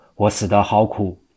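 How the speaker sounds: ordinary delivery, nothing marked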